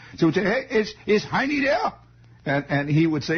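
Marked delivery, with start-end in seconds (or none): 0.5-2.0 bad put-on Bavarian German accent, very high, slow. Speaker retelling how he had to talk to be understood, terrible Bavarian German accent. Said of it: "my terrible, rotten Bavarian German accent".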